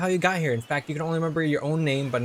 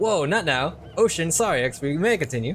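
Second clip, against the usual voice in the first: ordinary delivery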